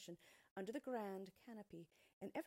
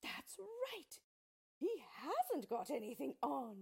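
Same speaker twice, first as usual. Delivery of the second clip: loud, drawn-out shout from the whole crowd; 8 semitones higher, 7 dB louder than usual. Narrator reading the whole crowd's line about the emperor at last, shouted. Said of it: "The people all shouted at last".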